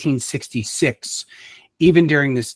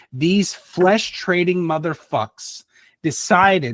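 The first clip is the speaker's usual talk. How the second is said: furious, worked-up, high, heated angry outburst; 5 semitones higher than usual. Talking to viewers about the Society of Prometheus, the speaker gets super mad. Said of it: "I'm getting super mad about it now".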